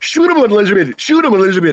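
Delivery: mushed toothless speech. Retelling a man in a boat spotting an alligator, imitating toothless speech. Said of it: "I don't think he had any dentures".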